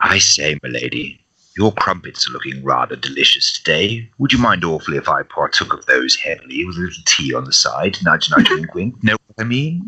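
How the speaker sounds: flirty, sexy, seductive voice. Prompted by another speaker to read a request aloud: sexy voice. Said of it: "Sexy [name] voice".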